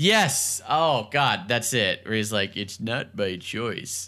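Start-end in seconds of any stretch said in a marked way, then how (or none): 2.6-4.1 soft, droopy, mournful cartoon hound voice. Placing a familiar joke voice, the speaker quotes the line in Droopy Dog voice. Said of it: "It definitely sounds like Droopy dog".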